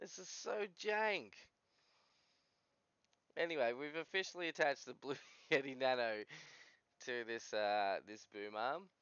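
talking through helpless, unstoppable laughter. Attaching a microphone to a boom arm on camera; laughing uncontrollably. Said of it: "I can't stop laughing".

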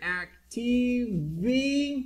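very slow, drawn-out, high-pitched delivery. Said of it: "So in this case we say here".

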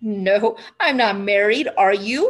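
laughing out loud. Asked by a ten-year-old girl if he is married, he answers laughing out loud. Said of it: "he laughed out loud".

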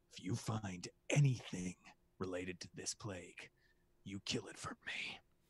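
very quiet, hushed whisper. A character embraces a departing companion and whispers into their ear: whispering. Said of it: "and whispers into your ear".

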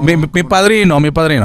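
ordinary talk, nothing marked

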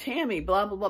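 light, mild, acted-out shouted babble. Speaker recounts the ex-husband in the living room, imitating someone screaming. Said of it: "he was like screaming at me".

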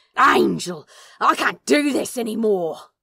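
very loud, angry, snarling, growled outburst. Crowley, to the angel, refusing the decapitation method, growled. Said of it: "Crowley growled".

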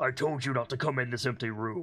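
completely deadpan, flat, expressionless, dead-level delivery. Game master voicing a character who stares at the player, completely deadpan. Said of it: "completely deadpan".

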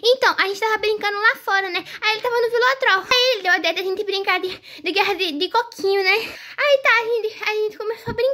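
hurried, garbled, breathless tumble of words. A daughter who came running explains to her mother what happened, rushed, hard to follow. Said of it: "eu não entendo nada que você tá falando".

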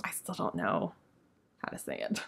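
soft whispered aside.

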